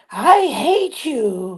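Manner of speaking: cute, tiny, very high little puppet voice. Retelling a puppet scene from a show, in the puppet's voice. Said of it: "that voice goes".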